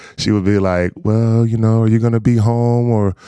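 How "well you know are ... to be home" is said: put-on sad tone, higher. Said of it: "it was this sad voice".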